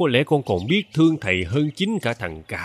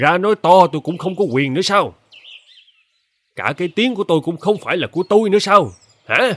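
furious, high-pitched, raised angry shouting; 6 semitones higher, 6 dB louder than usual. In a drama, a man told to stop shouting argues back, angry shouting. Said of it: "Thầy cứ quát cho hả giận".

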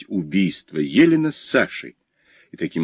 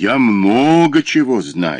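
very slow, drawn-out, openly mocking, taunting drawl; 2 semitones higher than usual. A man answers the narrator, who insists he knows more: openly mocking drawl. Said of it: "уже откровенно насмешливо протянул Сухов".

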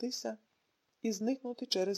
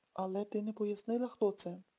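usual speaking voice

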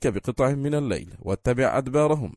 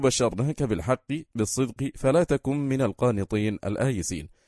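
ordinary delivery

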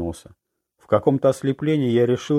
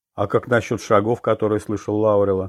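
plain

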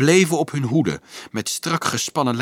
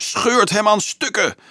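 very high-pitched shrieking cry; 9 semitones higher than usual. Anselmus, dancing on a stone as the fight breaks out, shrieks. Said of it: "gilde Anselmus".

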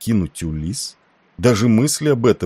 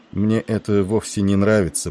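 plain

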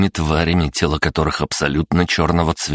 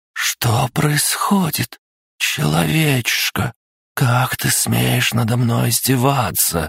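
high-pitched hissing fury; 8 semitones higher than usual. Propped against a dragon's body, the waking princess speaks to the narrator, hissing. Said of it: "прошипела она".

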